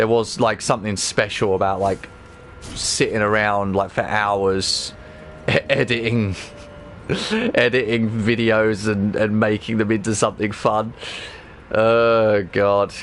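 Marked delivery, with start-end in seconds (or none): 2.6-10.9 sarcastic voice. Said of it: "I'm being sarcastic".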